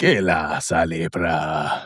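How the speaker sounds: deep, low put-on fantasy creature voice. Covering Pan's Labyrinth this week, doing a Pan impression. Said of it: "That's my that's my Pan impression".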